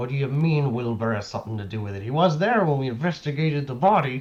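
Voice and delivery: hushed, low-voiced. As Turner, answering the lawman asking about Jeff Miller, hushed low voice. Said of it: "hush and say in a low voice".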